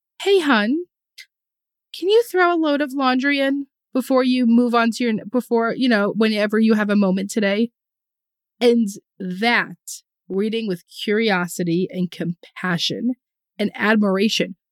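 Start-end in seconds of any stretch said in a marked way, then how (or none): 0.2-7.7 put-on delicate, light hint of southern accent. Imitating how a woman speaks, in a light southern twang. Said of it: "a little bit of this like twang".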